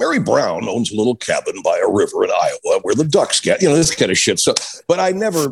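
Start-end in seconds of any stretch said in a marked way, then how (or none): 0.0-3.6 folksy news-anchor delivery. Imitating a Sunday morning newsman's sign-on: folksy Charles Kuralt voice. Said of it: "had a very folksy way".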